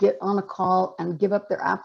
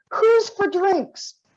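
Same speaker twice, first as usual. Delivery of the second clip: put-on very high-pitched call out in a British accent; 12 semitones higher than usual. Retelling how a conference speaker jumped up to gather everyone: imitating Dame Wendy Hall. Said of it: "She said it with a British accent".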